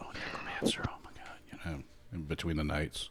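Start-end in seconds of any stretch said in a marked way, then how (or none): 0.0-1.4 soft, hushed whispered chatter. Voicing knights reacting at a feast: whispering knights. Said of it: "you hear whispers".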